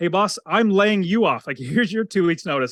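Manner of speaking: teasing, playful, tongue-in-cheek tone. Retelling giving two weeks notice to a boss: imitating own joking tone. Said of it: "jokingly, of course".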